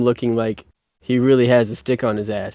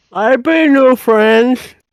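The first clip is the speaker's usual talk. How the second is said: very high, loud speech through a full mouth; 13 semitones higher, 8 dB louder than usual. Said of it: "could you take that out of mouth?".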